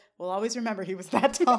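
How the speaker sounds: ordinary talk, nothing marked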